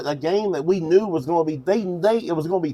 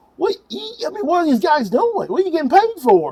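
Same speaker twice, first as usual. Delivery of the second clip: very high, incredulous, acted-out screaming; 10 semitones higher, 3 dB louder than usual. A speaker recounts watching football, retelling screaming at the TV. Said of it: "I'm screaming at the T V going".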